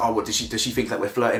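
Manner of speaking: ordinary delivery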